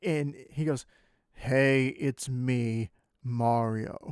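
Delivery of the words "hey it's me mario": put-on deep, plain, very slow voice, no Italian accent. Retelling how a man introduced himself as Mario: real deep, non-Italian voice. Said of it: "in this real deep, non-Italian voice".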